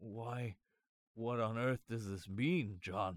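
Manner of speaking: halting, stammering, stuttering. A scared, puzzled man asks john about the envelope, stammering. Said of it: "he stammered".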